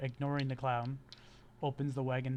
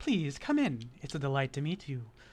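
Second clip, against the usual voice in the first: loud, swooping, theatrical, flamboyant elf voice; 5 dB louder than usual. Voicing a flamboyant elf who welcomes the players into a wagon: flamboyant elf voice. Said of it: "a flamboyant elf grins from ear to ear as he welcomes you into the wagon with a theatrical bow".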